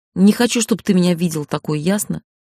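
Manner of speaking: ordinary delivery, nothing marked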